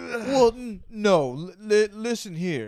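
very high, very loud, drawn-out angry stammer. Imitating how he reacts to hard questions: imitating Joe Biden getting mad. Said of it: "when they ask him hard questions and he gets mad".

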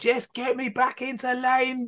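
furious yell, pitched very high. Retelling what you yelled at your dad during the race, as an angry shout. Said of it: "cuss and swear and shout at".

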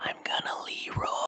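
in a whisper. A player's character turns back toward the party and speaks, whispering. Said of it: "I turn back toward the party and just whisper".

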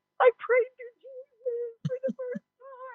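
mock crying speech, pitched way up, tearful. Retelling telling the boyfriend about praying, imitating own past crying. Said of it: "I'm crying. I'm like".

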